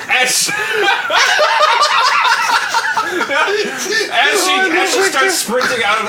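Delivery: laughing through the words.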